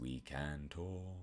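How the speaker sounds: very deep, bass-low, very soft, hushed voice. Answering a listener's question by showing how deep the voice goes, very deep voice. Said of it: "it can go deep like this".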